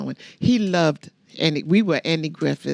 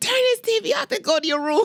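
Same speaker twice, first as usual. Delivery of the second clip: yelling, pitched higher. Retelling coming in and finding the children watching: retelling a screamed order. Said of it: "I went and screamed and yelled at them".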